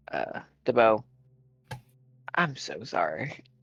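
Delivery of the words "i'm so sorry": hushed half-whisper under the breath. Voicing a character speaking to another character: half-whispering. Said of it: "whispers to".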